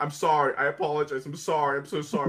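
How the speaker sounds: cringing, pathetic, over-apologetic, repeated tone. Retelling how Sasu reacts to criticism: imitating Sasu apologizing over and over. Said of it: "He has little baby fits whenever anybody criticizes".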